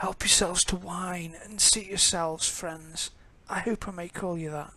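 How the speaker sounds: rasping, dry-throated, raspy voice. Voicing a host welcoming guests, the narrator uses a dry, raspy voice. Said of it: "the person's dry, raspy voice".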